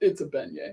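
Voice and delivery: very deep, rumbling bass voice. Retelling what the silent Uber driver finally said: deepest bass voice. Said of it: "the deepest bass voice".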